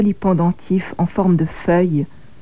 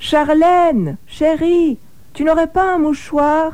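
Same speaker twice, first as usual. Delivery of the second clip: high, stretched-out calling voice; 10 semitones higher than usual. Fantine calls to charlène from behind her hiding place, shouting from hiding. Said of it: "Me crie Fantine de derrière sa pauvre cachette".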